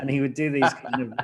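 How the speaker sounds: normal talking voice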